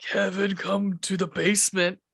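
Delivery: creepy, very scary, menacing, threatening voice. Retelling how a voice called four-year-old kevin to the basement, very scary voice. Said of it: "some very scary voice says".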